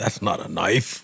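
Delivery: put-on Australian movie hero voice. Pulling out a bigger knife: Crocodile Dundee impression. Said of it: "Was that a good Crocodile Dundee impression?".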